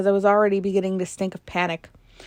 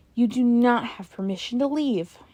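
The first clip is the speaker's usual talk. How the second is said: icy, cold tone; 4 semitones higher than usual. Narrator reads Dad's line as Hannah starts for the door: icy voice. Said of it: "Dad's voice turned icy".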